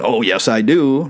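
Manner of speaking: ordinary talk, nothing marked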